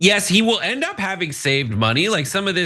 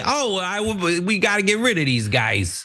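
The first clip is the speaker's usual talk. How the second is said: put-on New York accent. Imitating the same type of person again: put-on New York accent. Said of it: "It's New York, right?".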